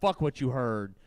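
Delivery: acted cool, smooth delivery. Retelling what a guy at high school said: imitating a cool, suave delivery.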